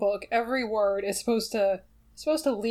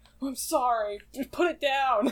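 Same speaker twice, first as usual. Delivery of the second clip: play-acted delivery with real anger; 2 semitones higher than usual. Retelling how a sleepwalker apologized at night: imitating Hannah's angry apology. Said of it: "said sorry, but, like, really angrily".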